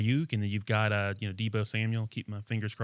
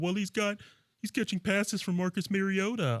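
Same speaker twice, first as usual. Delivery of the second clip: very high, scoffing, mocking voice; 10 semitones higher than usual. Imitating a critic doubting a player: mocking critic voice. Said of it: "What was that voice".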